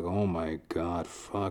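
low, slow mutter. Recalling his reaction to a customer's complicated drink order, retelling a mutter under breath. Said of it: "I kind of like muttered under my breath".

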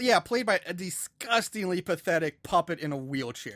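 normal talking voice

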